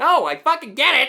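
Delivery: fed-up, exasperated, very loud, high shouting. On a podcast, told they don't get it, insisting they do, yelling. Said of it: "Stop yelling at me".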